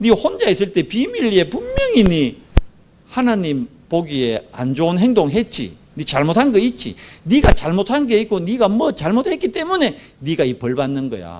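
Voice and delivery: high, mocking, sneering, accusing tone. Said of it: "친구들까지 이래 저주합니다".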